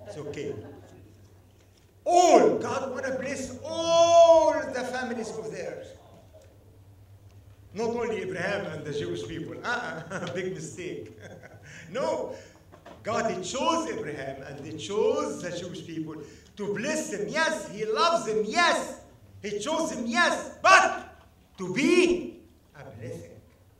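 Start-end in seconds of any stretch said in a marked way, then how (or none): 2.0-6.0 all underlined, high and loud. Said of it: "Underline the word all".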